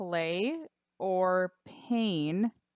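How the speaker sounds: very slow, deliberate, each word carefully drawn out. Listing game items, saying this one very slowly. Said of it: "I'm gonna say this really slowly".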